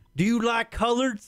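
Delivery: high-pitched West Virginia hillbilly voice. Retelling the tow truck driver's first question, imitating a hillbilly. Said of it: "some fucking hillbilly in West".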